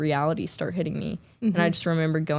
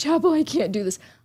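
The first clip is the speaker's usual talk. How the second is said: put-on crying and sobbing, pitched much higher; 10 semitones higher, 4 dB louder than usual. Recalling breaking down backstage before giving a speech, retelling crying. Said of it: "I start crying my eyes out".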